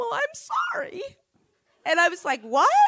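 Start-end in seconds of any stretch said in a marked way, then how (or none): 0.0-1.0 acted-out bawling wail in a very high voice. Retelling a story, the speaker quotes a woman's apology, imitating her bawling. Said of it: "instead she's bawling".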